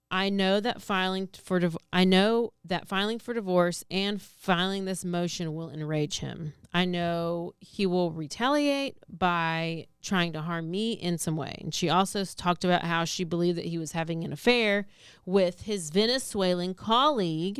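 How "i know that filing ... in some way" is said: normal talking voice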